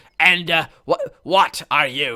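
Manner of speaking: loud nasal grunting creature voice. Narrator voicing a creature questioning a traveler, in a deep nasal grunt. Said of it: "the creature replies in a deep nasal grunt".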